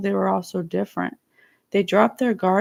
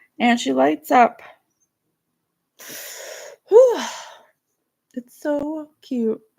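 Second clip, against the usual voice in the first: tearful, choked up, pitched-up voice on edge of crying; 6 semitones higher than usual. Telling listeners about a good dream, choked up, near tears. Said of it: "I'm gonna cry".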